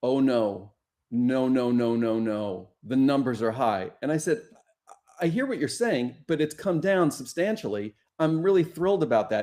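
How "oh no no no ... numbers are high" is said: mock solemn, slow, grave voice. Retelling her reply after hearing the number had come down: retelling a grave voice. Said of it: "she said in the grave voice".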